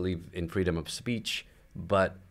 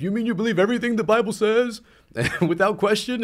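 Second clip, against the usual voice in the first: very high, shrill, screeching crying outburst; 7 dB louder than usual. Describing a meme panel's figure: imitating a screeching, crying guy. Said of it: "some screaming, you know, screeching guy crying".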